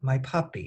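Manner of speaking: ordinary delivery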